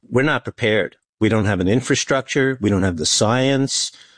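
ordinary delivery

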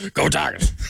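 fake gravelly coach voice. Saying a team cheer on request, in an Ed Orgeron voice. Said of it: "in the voice of Ed Orgeron".

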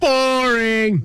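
long, drawn-out heckling jeer on one word. Retelling what one fan was yelling: imitating someone yelling. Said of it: "You know what he was yelling?".

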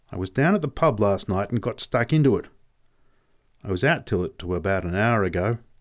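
ordinary delivery

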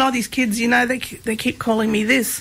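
normal talking voice

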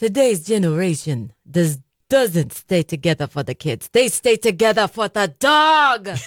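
laid-on, put-on Jersey Italian accent. Speaker taking on a Jersey Italian persona, Italian accent. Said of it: "you've got an Italian accent".

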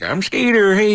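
country comic voice. Imagining a comedian coming on stage: country western comedian voice. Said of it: "a country western, like, comic".

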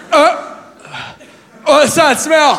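high, slow, groggy, half-asleep blurt. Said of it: "when you blurt shit out in, like, a half sleep".

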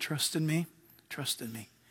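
very quiet, still, small whispering voice. Voicing God answering people who are going crazy: whispering still small voice. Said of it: "the throne of God whispering still small voices".

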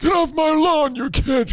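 put-on elderly man voice, very high-pitched. Asked by someone to do the old man voice again, the speaker does it: old man voice. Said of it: "I got to hear that old man voice more".

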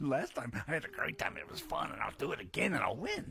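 put-on childish little boy voice. Teasing another speaker, the speaker acts them out in a childish little-boy voice. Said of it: "I can see the little boy coming out of you right now".

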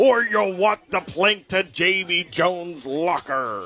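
put-on old-time sea-dog pirate character voice. Reading out an ad's line as authentically as possible: pirate voice. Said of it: "It says in a pirate voice".

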